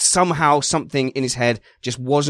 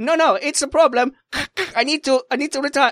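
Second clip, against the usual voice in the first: put-on Italian accent, much higher and slower; 13 semitones higher than usual. Voicing a driver on the race radio, Italian accent as Fernando Alonso. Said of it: "why you were doing an Italian accent".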